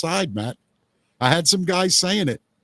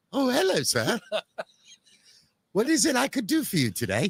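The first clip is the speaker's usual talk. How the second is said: prissy, proper, fussy robot-butler voice; 4 semitones higher, 4 dB quieter than usual. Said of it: "I wish I could do that voice".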